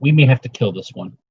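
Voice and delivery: hushed whisper. Speaking in character, turning to Zandak: whispering. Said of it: "I turned and whispered to Zandak".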